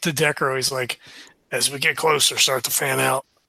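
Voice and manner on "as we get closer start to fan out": muttered quietly under breath, lower. Voicing a character who quietly tells a companion to fan out: said under his breath. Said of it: "he just says under his breath".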